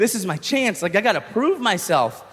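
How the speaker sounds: ordinary delivery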